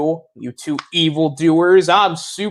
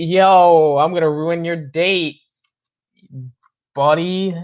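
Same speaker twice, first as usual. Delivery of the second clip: mock drunk, slurred-style speech; 2 semitones higher than usual. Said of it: "who's drunk".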